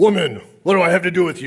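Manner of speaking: curt, rude, dismissive tone. Showing how a translated line's tone comes across: curt, disrespectful tone. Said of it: "the tone is way off".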